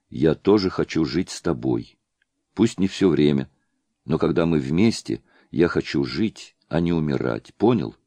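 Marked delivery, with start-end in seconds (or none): none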